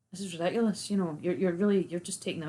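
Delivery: normal talking voice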